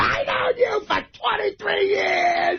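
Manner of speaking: play-acted drunken yell, very slow, high, drawn-out. Retelling how Ronnie stood up to make a toast, imitating Ronnie screaming. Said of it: "He's screaming".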